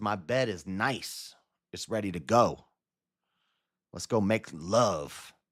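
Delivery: sweet-talking, flattering, seductive come-hither voice. Retelling a story of a woman luring a lonely guy: imitating a flattering seductress. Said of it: "She got a flattering mouth".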